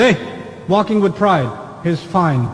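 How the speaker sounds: ordinary delivery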